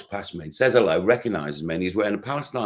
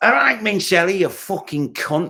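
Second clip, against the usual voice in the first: put-on Manchester accent; 10 semitones higher, 6 dB louder than usual. Retelling Liam greeting the speaker after ten years apart: imitating Liam's Manc accent. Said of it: "What's the what's the Manc accent?".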